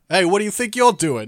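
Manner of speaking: put-on very loud, terrible New York accent. Describing a series' guard voice actor, the speaker does a terrible New York accent. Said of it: "that was a terrible, terrible New York".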